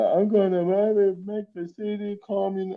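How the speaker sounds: very high-pitched put-on Chinese accent. Retelling a video impersonating the mayor: Olivia Chow impression with Chinese accent. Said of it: "a video of her just going".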